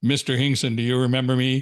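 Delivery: put-on deep voice. Retelling a former student greeting him at a fair, imitating Marty's deep voice. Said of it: "in this deep voice".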